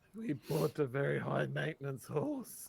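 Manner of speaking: whispered aside. A character walks up to Nana and whispers to her, whispering. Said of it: "Goes up to you and whispers".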